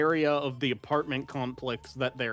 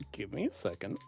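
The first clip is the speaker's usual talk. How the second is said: whispered aside, lower and quieter; 4 semitones lower, 8 dB quieter than usual. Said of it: "I thought that was Amy whispering that".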